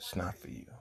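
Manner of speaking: grave, solemn, quiet, almost whispered. Telling someone a thing is not for them, grave, solemn tone. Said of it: "notice how my tone changed with that ... See how solemn I said that?".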